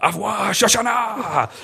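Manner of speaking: high, slow, loud mocking villain shout.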